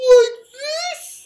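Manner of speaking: shrill, very high-pitched and very loud voice. Speaker showing viewers that they can do high voices: high voice. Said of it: "have you guys ever noticed that I can do high voices?".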